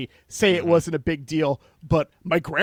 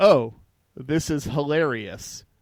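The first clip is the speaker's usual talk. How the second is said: slow, unamused drawl, mock amused without laughing. Describing reactions to a movie, imitating flat unamused "hilarious". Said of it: "I'm saying the words in that tone".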